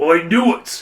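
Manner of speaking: yelling in a character voice. Voicing Harbolt in a game scene: shouting as Harbolt. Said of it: "shouts Harbolt".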